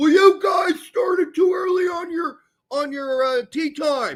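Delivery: loud yelling, pitched high.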